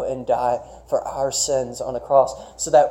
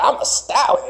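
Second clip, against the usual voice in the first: high, rough cartoon donkey voice, pitched up; 10 semitones higher than usual. Quoting the movie donkey's colt after magic makes it a stallion, in Eddie Murphy's donkey voice. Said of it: "It's Eddie Murphy's voice".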